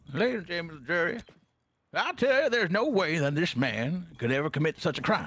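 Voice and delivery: cartoon rooster voice. Playing a lawyer addressing the jury about his client, in the Looney Tunes rooster voice. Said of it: "I do the uh the rooster from the Looney Tunes".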